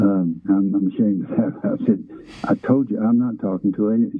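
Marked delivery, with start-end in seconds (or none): none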